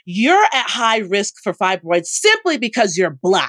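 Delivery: mock blurted shout, high and swooping. Retelling what the woman swabbing her shouted at her, retelling a shout. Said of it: "she shouted".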